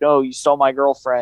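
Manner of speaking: usual speaking voice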